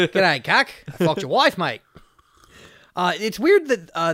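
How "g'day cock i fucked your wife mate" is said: put-on, fake Australian accent. Joking about crude lines, saying one in a put-on Australian accent.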